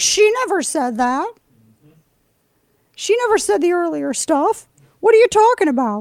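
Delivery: very high-pitched, squeaky cartoon voice. Mocking what the media says, in a Mickey Mouse voice. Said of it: "I don't know why I sound like Mickey Mouse".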